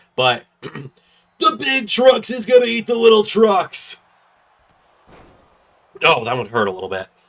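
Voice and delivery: rough-sounding voice pitched very high. Wrestling commentator kicking off his Raw prediction: rough voice. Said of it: "going to sound a little rough".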